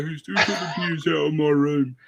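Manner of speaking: put-on Birmingham accent, pitched high. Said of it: "shuffling out of his bedroom and like".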